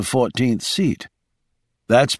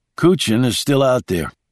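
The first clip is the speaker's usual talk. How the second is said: ordinary delivery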